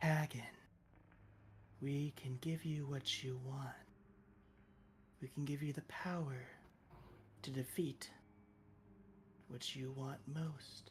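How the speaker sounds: barely-there, very faint, hushed feminine voice. The game narrator voices a monolith speaking to a player's character, very faint female voice. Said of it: "it says in a very faint and female tone".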